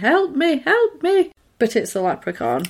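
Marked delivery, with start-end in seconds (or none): 0.0-1.3 high, slow, drawn-out woman's voice. Retelling a story where a leprechaun calls out, imitating a woman's voice. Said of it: "there's like a woman's voice like".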